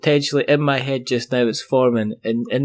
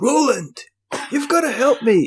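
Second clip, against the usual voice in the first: going very high and missing the pitch; 12 semitones higher than usual. Retelling a man jumping out of a DeLorean asking for help, bad Doc Brown impression. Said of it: "that's not Doc Brown's voice".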